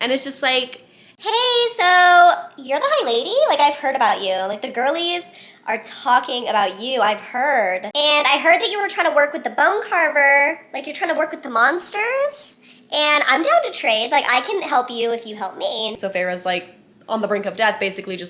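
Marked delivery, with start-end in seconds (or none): 1.2-16.0 tiny little voice, high and animated. Telling a story, a voice speaks in a trapped character's mind; little tiny voice. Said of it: "this little tiny voice just starts talking".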